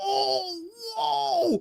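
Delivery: play-acted very high, awed, wowed ooh. Retelling how people behind a dancer react: imitating cheering onlookers. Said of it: "a bunch of people behind him going".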